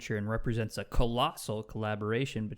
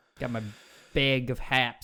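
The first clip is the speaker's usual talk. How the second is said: put-on Chicago accent; 4 dB louder than usual. Mocking how people from Chicago say 'hops', the speaker puts on a Chicago accent. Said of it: "Haps from Chicago".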